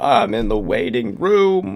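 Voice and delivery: mock whiny complaining voice. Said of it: "you are just over there like".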